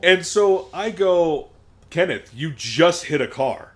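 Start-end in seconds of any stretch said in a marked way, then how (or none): none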